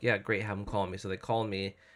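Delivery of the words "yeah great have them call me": ordinary talk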